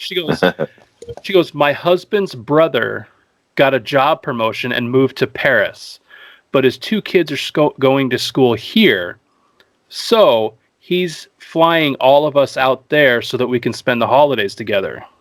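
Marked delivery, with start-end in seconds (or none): none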